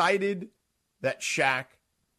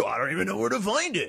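put-on voice, rough and creaky; 5 semitones higher than usual. Mocking another speaker's excuse for not finding a show: Adam Sandler-ish impression of Cappy. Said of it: "a very Adam Sandler-ish, uh, impression of Cappy".

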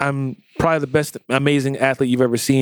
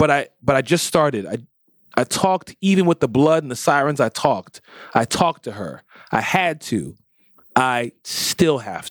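plain

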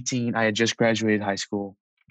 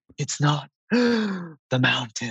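dramatic heavy breathing, very slow and pitched up; 5 semitones higher than usual. Retelling a friend's words while imitating his heavy breathing. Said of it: "he's breathing heavy like that".

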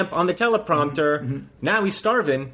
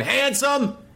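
mock angry yell, pitched high; 9 semitones higher than usual. Relaying what Jerome says through an earpiece, angrily yelling as Jerome. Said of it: "But in an angry way. So he's going".

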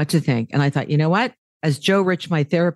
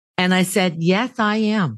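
plain

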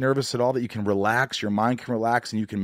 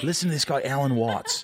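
attempted Welsh accent drifting into Australian accent. Imitating Matt Ryan talking about mental health: Matt Ryan impression, accidentally Australian. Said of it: "I'm doing Australian, aren't I?".

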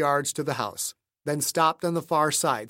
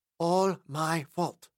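tiny, faint, small weak little voice. Ruhmkorff, holding something in his ravaged hand, speaks in a tiny voice. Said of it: "said in a tiny voice".

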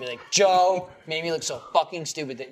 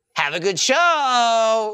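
mock sarcastic tone, pitched higher and louder; 9 semitones higher, 7 dB louder than usual. Imitating Sarah wishing a good show, sarcastic-sounding tone. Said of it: "that just sounded really sarcastic".

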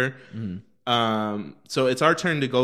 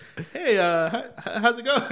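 acting very confused, much higher, slower; 10 semitones higher than usual. Retelling a masked man's reply when the speaker greeted him, imitating someone super confused. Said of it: "And he was super confused".

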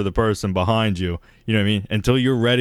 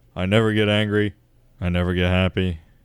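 put-on deadpan, flat, level, uninflected monotone; 3 semitones lower than usual. A speaker imitates a straight-faced guy they are describing; imitating a flat monotone. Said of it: "reads Cards Against Humanity as a monotone".

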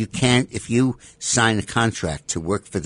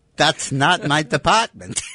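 put-on German accent, pitched higher; 7 semitones higher, 3 dB louder than usual. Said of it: "He does a good German accent".

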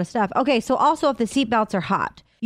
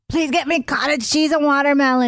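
high, impassioned, acted-out screaming yell; 5 semitones higher than usual. Co-host retelling the other host's request from the other room, retelling a scream. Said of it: "he screams from the other room".

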